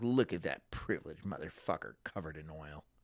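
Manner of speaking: put-on snide, scornful, sneering jeering voice. Imitating women sneering at a worker: imitating a sneering woman. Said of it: "Sneered at and be like".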